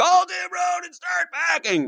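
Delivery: mock piercing, very high screaming shriek. Retelling a realtor's tv ad where he jumps off a bridge: imitating someone screaming. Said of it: "he's screaming".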